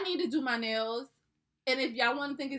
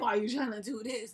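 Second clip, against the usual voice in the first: put-on old man voice, insecure. Imitating an insecure man questioning what she is doing, in a grandpa voice. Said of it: "the grandpa voice".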